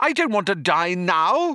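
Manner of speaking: wild, high, frantic, pleading shouted voice. Narrator reads a captive man facing the guards, yelling. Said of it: "he yelled".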